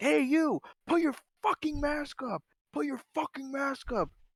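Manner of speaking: high-pitched screaming voice. Retelling a driver at a crosswalk screaming at them: imitating a man screaming. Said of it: "he was actually screaming at me".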